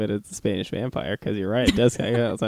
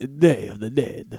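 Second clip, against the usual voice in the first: vampire-like narrator delivery, Spanish-narrator style; 2 semitones higher than usual. Asked what the holiday is called, speaker answers; Spanish narrator voice. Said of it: "sounds a little bit like a vampire".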